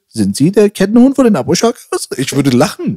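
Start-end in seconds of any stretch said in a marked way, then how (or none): 0.2-2.1 high, swooping, comical street reporter voice. Imagining the guy standing next to him and asking a question, imitating that guy's voice. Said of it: "Aber die Stimme von dem Bro".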